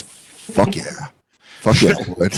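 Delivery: low, seedy, lecherous voice. Retelling a man's reply to a woman cooking chicken, imitating a seedy, horny voice. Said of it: "such a seedy, horny voice for food".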